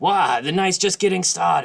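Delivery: put-on loud, high, drunken rambling. Voicing Gundren refusing to leave for the night: rambling drunk. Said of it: "as he's rambling on drunk".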